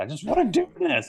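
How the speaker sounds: very high, shrill, loud yell. Retelling a childhood argument with dad: imitating own past yelling. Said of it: "I remember literally yelling at my dad".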